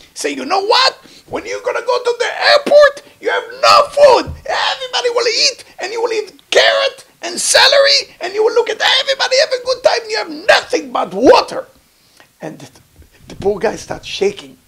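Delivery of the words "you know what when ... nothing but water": screaming rant, very high pitch, very loud. Retelling a young rabbi warning a convert about hardship: imitating someone screaming. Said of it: "he starts screaming at the person".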